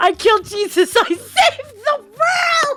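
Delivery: put-on kid's triumphant cheer, high, rising, drawn out. Retelling how a child cheered after winning a pretend game: imitating a child cheering. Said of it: "he starts cheering".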